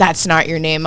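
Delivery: ordinary delivery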